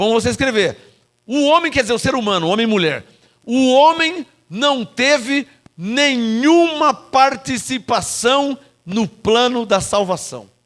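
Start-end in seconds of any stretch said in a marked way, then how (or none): 3.4-10.4 slow, deliberate, word-by-word, spelled-out dictation delivery. Dictating a sentence for listeners to write down, slow, deliberate delivery. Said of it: "vou falar devagarzinho".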